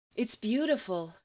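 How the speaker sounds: murmuring breathlessly. A passenger, realizing they are underway, speaks in a breathless murmur. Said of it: "Eve murmured breathlessly".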